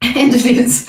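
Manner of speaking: speaking through laughter. Giving a card reading about a partner coming, laughing while talking. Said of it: "I'm sorry I'm laughing".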